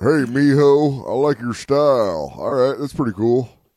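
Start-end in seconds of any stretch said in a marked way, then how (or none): 0.0-2.3 slow, louder cowboy drawl impression. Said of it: "Do I sound like Sam Elliott right now?".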